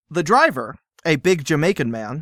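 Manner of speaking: plain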